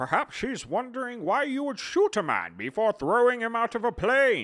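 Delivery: very high, very loud movie-villain voice. Talking about The Dark Knight Rises, the speaker offers a Bane impression. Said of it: "you want to hear my Bane impression?".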